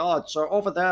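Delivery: put-on German-accented speech. Retelling how an event organizer gave directions to the press area: German accent imitating Alex Muller. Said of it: "in, like, a German accent".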